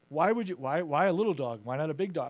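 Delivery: ordinary delivery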